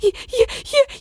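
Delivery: high, loud sobbing.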